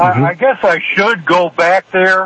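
usual speaking voice

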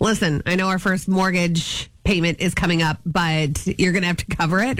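ordinary talk

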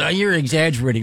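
put-on girly woman's voice. Speaker explaining why they took a photo as proof, imitating a woman's voice. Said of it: "That was a good chick impression".

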